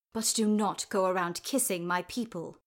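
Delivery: snarled, snarling. Narrator reads a man rising to tower over Sarah, snarling.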